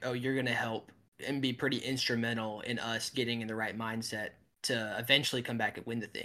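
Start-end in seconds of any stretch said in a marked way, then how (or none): none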